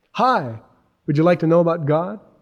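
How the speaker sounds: plastic, fake, phony enthusiastic radio DJ voice. Showing the wrong way to approach people: phony DJ-type voice. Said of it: "this DJ type voice".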